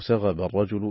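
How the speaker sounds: ordinary delivery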